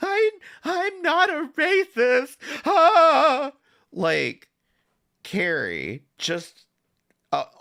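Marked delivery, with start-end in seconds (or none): 0.0-3.5 very high, very slow crying, "ah" drawn out. Mocking someone who cried about an accusation: imitating Carrie crying. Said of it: "the way she was fucking crying".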